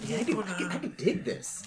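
whisper. Acting out what he said, imitating his whisper. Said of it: "his whisper's like".

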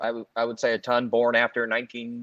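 plain

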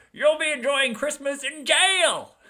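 badly done, very high, screechy old man villain voice. Discussing the film's antagonist, old man Potter, doing a terrible Potter impersonation. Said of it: "That was a terrible Potter impersonation".

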